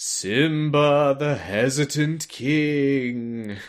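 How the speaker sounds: eerie, taunting ghost voice, king drawn out. Retelling how hidden characters taunted someone, mock-taunting in a ghost voice. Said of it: "taunting him in, like, ghost voices".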